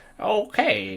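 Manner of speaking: hammy, very high put-on villain voice. Describing how the show portrays characters: Bane Dark Knight voice. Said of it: "you have Bane with his, like, you know, um, like, Dark Knight voice".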